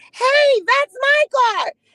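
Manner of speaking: mock very high, drawn-out screaming yell. Retelling how the upstairs neighbor reacted to the vandals: imitating a woman screaming. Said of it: "the way she said it".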